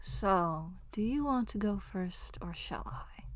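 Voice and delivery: very quiet, soft, courteous voice. A narrator voices Kirian speaking to the players, in Kirian's quiet voice. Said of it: "You hear Kirian's quiet voice go".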